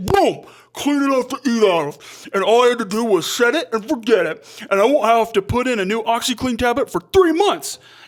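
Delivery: mock talking with mouth full. Describing a commercial bit, acting out the woman mock talking with her mouth full. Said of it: "with a full mouth".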